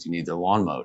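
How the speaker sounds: ordinary delivery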